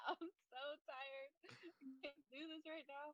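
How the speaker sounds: mock tearful, soft, worn-down sobbing voice. Retelling a breakdown in the shower, imitating own sobbing. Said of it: "I was sobbing in the shower".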